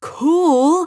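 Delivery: long, high, stretched-out, drawn-out yell. Reading a story, a character sees a golden streak of light cross the sky: yelled. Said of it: "yelled Joseph".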